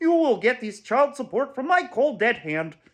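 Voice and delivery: high-pitched frog puppet voice. Quoting a man who sounded just like Kermit the Frog, in a Kermit the Frog voice. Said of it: "sounded just like Kermit the Frog".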